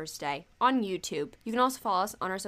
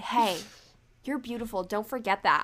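put-on gushing vlogger voice. Imagining a YouTuber talking to the camera: imitating Kian Lawley. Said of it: "if Kian Lawley looked me in the camera and said".

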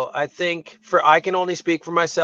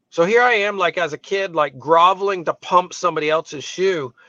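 usual speaking voice

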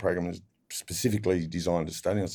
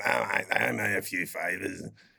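put-on creaky, rough old-gangster talk. Retelling a jail visit from a lawyer mate, imitating Nick's old-gangster talk. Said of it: "Nick talks like an old gang".

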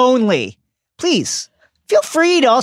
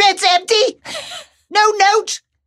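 put-on scolding voice, pitched higher; 10 semitones higher than usual. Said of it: "In their best Julie Walters voice".

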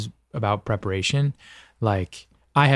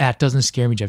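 ordinary talk, nothing marked

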